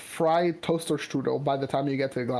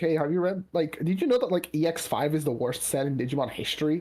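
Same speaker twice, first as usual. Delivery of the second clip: usual speaking voice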